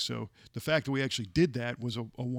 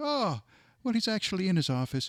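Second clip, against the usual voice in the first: high, swooping, sing-song Irish lilt; 8 semitones higher than usual. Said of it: "she had this great Irish accent".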